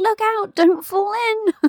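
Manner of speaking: high, slow, mock calling out.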